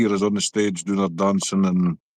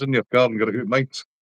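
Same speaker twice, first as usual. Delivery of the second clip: ordinary talk, nothing marked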